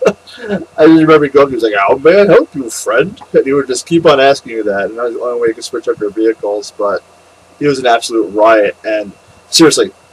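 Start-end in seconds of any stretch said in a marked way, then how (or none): 1.9-3.2 awful put-on elephant genie accent, pitched up. Remembering a racing game, the speaker quotes the elephant genie in its horrendous accent. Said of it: "that elephant genie with that horrendous accent".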